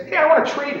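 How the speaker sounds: high, loud, eager voice. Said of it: "something in your voice that says".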